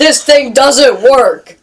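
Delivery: play-acted, full-on, loud, relentless yelling. Retelling a woman at the grocery checkout, imitating her yelling. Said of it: "she's just yelling and yelling".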